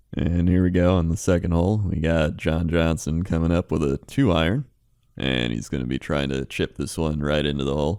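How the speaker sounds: low, slow, unhurried golf announcer voice. Answering a request to give the best golf announcer: golf announcer voice. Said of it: "give us your best golf announcer".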